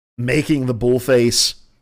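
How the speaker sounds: normal talking voice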